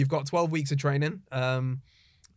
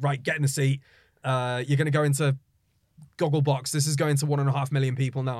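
ordinary talk, nothing marked

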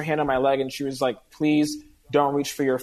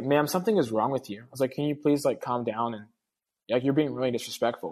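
put-on cordial, courteous tone, quieter; 5 dB quieter than usual. Speaker recounting what they said to a screaming woman, acting out being cordial. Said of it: "I was being really cordial".

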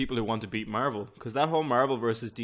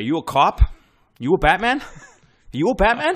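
put-on high, very loud, yelled Boston accent; 7 semitones higher, 10 dB louder than usual. Speaker imagines a Scorsese-produced Joker turning around to ask questions, Joker with a Boston accent. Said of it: "the Joker will have a Boston accent".

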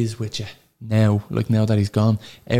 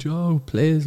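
light, pleading shout, called out; 6 semitones higher than usual. Retelling a man calling up from below: imitating someone shouting. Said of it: "he shouted down".

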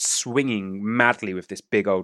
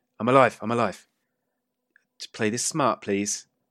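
put-on woman's voice. Retelling a hostage scene, the gagged woman answers her captors, female voice. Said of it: "you just hear the female voice going".

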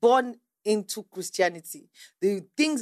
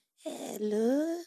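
put-on elderly voice; 3 semitones higher, 8 dB quieter than usual. Retelling a phone call from an old woman: imitating her voice. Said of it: "That's how she sounded".

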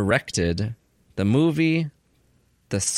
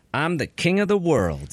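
plain

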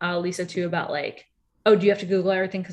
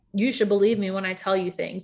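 put-on angry snap, sharp and irritated. Retelling a quarrel where one person snapped: retelling an angry snap. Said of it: "she was just super angry".

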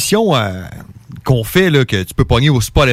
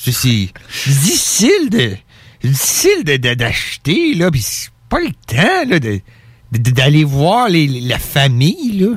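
pitch swinging up and down. Proudly doing an impression of François Legault for a co-host: François Legault impression. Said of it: "mon imitation, là, de François Legault".

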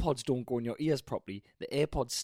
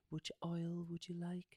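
breathy whisper, much quieter; 5 semitones higher, 12 dB quieter than usual. On the podcast, showing off a hotel spa voice: breathy spa whisper. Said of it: "It's the sort of the breathy whisper".

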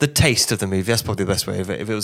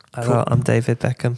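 soft-spoken, quiet, famous-sounding voice; 2 semitones higher than usual. Following a remark on a soft-spoken voice: David Beckham impression. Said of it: "I can kind of do David Beckham".

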